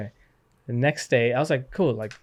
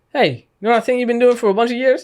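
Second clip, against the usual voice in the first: put-on frustrated voice, higher and louder; 11 semitones higher, 10 dB louder than usual. Retelling how dad walked in and told him to quit: imitating a frustrated dad. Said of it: "he just walked in frustrated".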